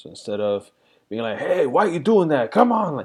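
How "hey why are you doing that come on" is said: mock angry, raised voice, high and climbing. A parent acts out how they used to talk to their daughter, retelling a raised voice. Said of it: "normally I would raise my voice".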